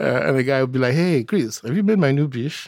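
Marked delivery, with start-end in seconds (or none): 0.9-2.7 delighted, proud, joyful and respectful tone. Retelling how a guy introduced his new girlfriend: imitating a joyful, respectful tone. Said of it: "said with absolute joy and respect".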